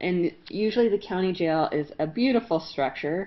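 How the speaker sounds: ordinary delivery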